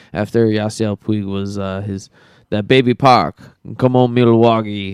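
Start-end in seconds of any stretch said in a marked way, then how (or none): 2.5-4.9 put-on shouting in a Cuban accent. Talking about last year against the Dodgers, do a Yasiel Puig impression with a Cuban accent. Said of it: "nice impersonation".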